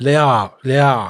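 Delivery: slow, mumbled delivery. Retelling what was said on the phone: imitating someone mumbling. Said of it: "they were mumbling something like".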